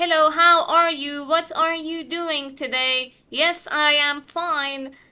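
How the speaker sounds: loud, mechanical, robot-like delivery. Showing a learner chatting with people in an Australian café: robotic speech. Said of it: "صحبتتون کاملا رباتیکه و مثلا اینجوری صحبت میکنید".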